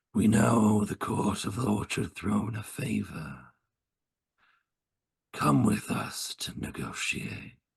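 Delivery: slow, rough, gruff, raspy voice. Narrator voicing the coachman speaking to the group, gruff, raspy voice. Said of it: "in a very kind of gruff, raspy sort of voice".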